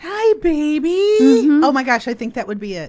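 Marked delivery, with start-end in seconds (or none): 0.0-1.2 put-on high cooing pet talk, baby stretched. Asked to make your request the way you talk to your cat: pet-talk voice. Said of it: "make your request in the voice that you use when you talk to your pet".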